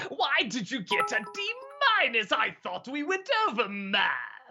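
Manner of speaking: clown-villain voice with wildly swooping pitch. Retelling a dad talking to his kid, in the Joker voice. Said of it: "but he's doing it in the Joker voice".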